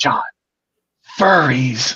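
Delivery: put-on hushed whisper. Retelling his buddy tapping his shoulder at the fair: retelling a hushed whisper. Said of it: "in a very hushed whisper".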